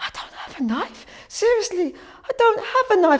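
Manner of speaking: tearful, high, sobbing, crying pleading tone. Retelling police bashing in the door over a knife: retelling crying and pleading. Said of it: "I was crying my eyes out".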